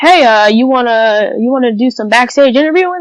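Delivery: own natural voice, casual tone. Retelling being offered backstage interviewing work: Mister Heath voice. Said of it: "in his voice".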